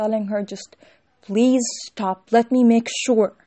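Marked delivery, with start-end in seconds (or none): 1.2-3.3 very loud shouting. Recounting how a cousin yelled at a crying woman: retelling a cousin's yell. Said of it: "so he was like yelling at her".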